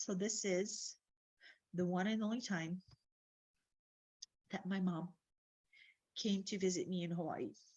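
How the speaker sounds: voice breaking with tears, halting, choking up. Showing the photo from the only time their mom visited, teary and choking up. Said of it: "I'm not crying. Yes, I am".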